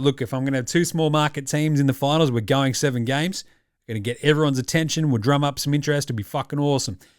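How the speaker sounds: ordinary delivery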